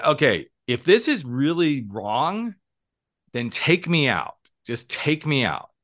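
crying out with the pitch lifted. Retelling yelling at god alone on a beach at night: imitating own past yell. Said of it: "I yelled at him and I said".

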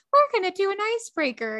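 high-pitched mock of own voice as heard recorded. Imitating how own recorded voice sounded: imitating own high-pitched voice. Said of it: "my voice sounds so high pitched".

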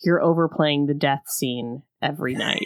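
confiding, voiced stage whisper. Retelling how he leans into her ear at the party: imitating a half-whisper. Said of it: "into her ear and whispers".

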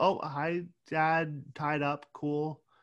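put-on, slow, offhand, utterly unbothered breezy tone. Retelling how E.B. walks in and greets everyone: imitating E.B. sounding very casual. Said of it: "he walks in very casual".

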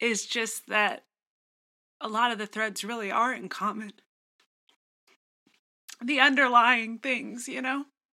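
voice catching, choked up, close to crying. Speaking on a podcast, on the verge of tears. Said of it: "now I'm going to cry".

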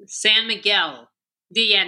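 Spanish place name in heavy American English accent. Asked to say the town name for u.s. listeners, in a thick gringo accent. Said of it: "Can you say that in like thick gringo accent".

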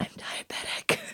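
low, soft whisper close to the ear. Retelling what a man whispered to the speaker: retelling a whisper. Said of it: "he like whispers to me".

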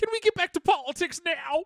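zany cartoon voice, very high pitched. Recalling a Hamilton moment, doing someone's line in a Looney Tunes voice. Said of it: "in a very fucking Looney Tunes voice".

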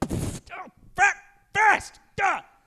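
very high pained cry, swear bitten back. Joking about a show title, imitating a dad who hits his thumb, stifling a curse. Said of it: "sounds like a dad who's trying to not cuss".

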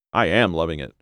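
usual speaking voice

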